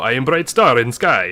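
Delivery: put-on slight French accent. Describing how he heard a book character talk, in an almost French-sounding accent. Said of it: "almost French kind of sounding accent".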